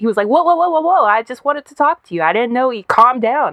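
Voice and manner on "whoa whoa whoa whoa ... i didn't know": mock, high, thrown-off, flustered backing down. Retelling a man's reaction to being ignored: imitating a thrown-off man. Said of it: "he was so thrown off".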